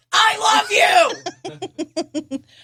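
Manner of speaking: very high, over-excited, gushing shout. Showing how to read a sentence ending in an exclamation point, exclamation-point tone. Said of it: "immediately change your tone of voice to".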